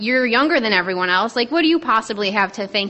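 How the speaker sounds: plain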